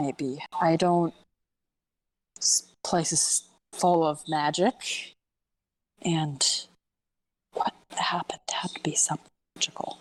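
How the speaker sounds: muttering under the breath. A character in a group scene mumbling to herself, quiet mumble to herself. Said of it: "I purposely did that quieter, so that was more mumbled to herself".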